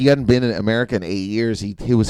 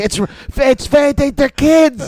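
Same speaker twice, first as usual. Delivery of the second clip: put-on yell, higher and louder; 6 dB louder than usual. Retelling a mother yelling at a father about the kids: imitating mom yelling. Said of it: "my mom's yelling at him".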